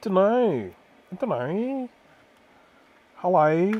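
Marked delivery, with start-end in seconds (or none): 3.2-3.7 Australian accent, belted out loudly. Showing how Australians say hello, a speaker uses an Australian accent. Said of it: "That's how Australians say hello".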